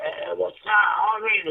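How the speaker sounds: very slow, drawn-out, drugged-out stoned drawl. Imitating how people sound when high on heroin: imitating a deep heroin-high voice. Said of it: "hella deep".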